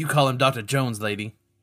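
cross, sulky, angry tone. Voicing Short Round correcting a player at breakfast: angry Short Round voice. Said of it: "Short Round kinda sits angrily next to Doctor Jones and is like".

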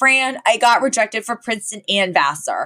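put-on very upset, distressed, bursting outburst. Retelling a TV scene where a girl enters with news: imitating Maggie super upset. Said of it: "She's super upset".

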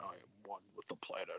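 put-on deep thoughtful voice. Quoting the video game's Swamp Thing intro: deep thoughtful Swamp Thing voice. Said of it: "deep but thoughtful dialogue and, and voice".

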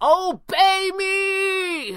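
shrill frantic desperate screech, very high. Pavli, waving the Eye of Anubis as monsters close in: desperate shriek.

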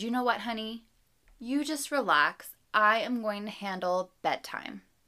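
very kind, kindly tone, quick pace. Describing bedtime when a partner offers to take over, imitating a kind partner. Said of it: "Your partner very kindly says".

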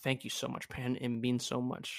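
sarcastic tone. Thanking a friend for saying they are proud: sounding sarcastic. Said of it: "I think that sounded hella sarcastic".

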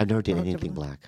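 half-whispered, very close into the mic. Answering a question about dating, half-whispering into the microphone. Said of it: "He whispered into the microphone".

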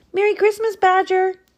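very loud, very high-pitched shout. A narrator reads a rabbit greeting a grumpy badger, shouting. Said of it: "shouted Rabbit".

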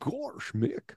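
soft, breathy cartoon dog voice. Showing the cartoon voices they do for their kids: Goofy voice. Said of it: "I'll do a little goofy as well".

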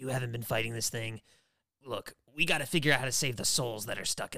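low, deep, put-on character voice. Retelling a Wolverine and Psyche fight scene, Wolverine's line in Wolverine voice. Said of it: "I don't know why I'm talking in his voice".

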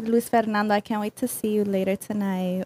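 sultry, sexy, seductive put-on voice. Showing how they would talk to Luis Fernando, changing their voice: sexy voice. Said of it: "sexy, though".

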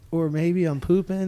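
ordinary delivery

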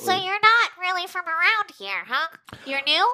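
friendly, nosy, chatty folksy trooper voice, pitched high. In an actual-play game, a patrolling stormtrooper questions a newcomer, folksy stormtrooper voice. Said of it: "It's a very folksy stormtrooper. / I'm just doing my beat. / It's a very folksy stormtrooper. / Oh, these helmets".

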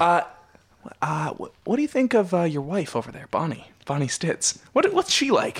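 hushed whisper. Asking a guest about his wife over there, whispering so she can't hear. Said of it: "I'm whispering".

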